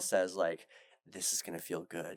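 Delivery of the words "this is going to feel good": mock seductive tone, quieter. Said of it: "that seductive voice".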